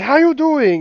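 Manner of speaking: put-on heavy Chinese accent, very high and very loud. Speaker retelling the new chef coming out to greet them at lunch, imitating Henry's Chinese accent. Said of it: "he's like full on Chinese accent".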